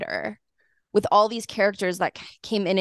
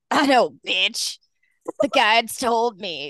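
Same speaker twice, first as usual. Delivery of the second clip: put-on voice of a heavy smoker and drinker; 2 semitones higher than usual. Retelling what a cult leader said to a member: Mother God's heavy drinking voice. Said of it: "cigarette, like, heavy drinking voice".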